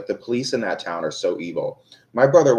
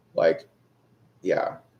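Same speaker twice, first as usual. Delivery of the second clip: normal talking voice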